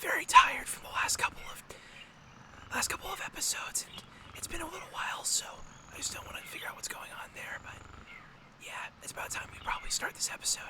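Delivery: very quiet, hushed voice. Host opens the episode trying not to wake Mario: talking really quietly. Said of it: "talking really quietly".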